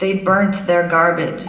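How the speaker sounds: portentous, loud, put-on American presenter accent. Speaker mocks foreign news anchors' report, in a put-on american accent. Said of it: "That was my American accent".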